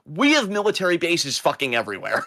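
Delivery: worn-out, exasperated, fed-up tone. Responding to a meme seen going around: exasperated. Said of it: "I'm just saying in an exasperated".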